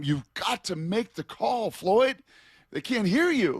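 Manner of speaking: high, barking, yelling mock coach voice. Retelling how the line coach yelled at a quiet lineman, imitating a yelling coach. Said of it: "the line coach would be yelling at him".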